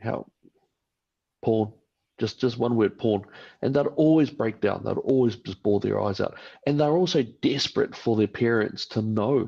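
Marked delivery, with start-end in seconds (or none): 0.0-1.7 mock very calm, even speaking tone. Retelling what they used to say to a child, retelling a very calm voice. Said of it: "very calm voice".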